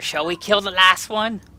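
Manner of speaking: shrill goblin voice calling out. A goblin moves up and calls out to its master, goblin shouting to its master. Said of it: "he like shouts to Master".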